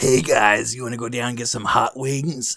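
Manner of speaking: gravelly cartoon character voice. Asked what the character would say, doing a gravelly Regular Show character voice. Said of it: "He just has like a gravelly voice".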